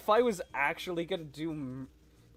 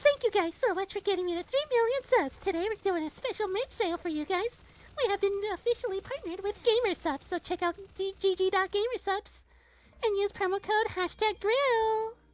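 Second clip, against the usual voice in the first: put-on girl voice, feminine. Thanking viewers for three million subs and plugging a merch sale, girl voice. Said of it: "How was girl voice?".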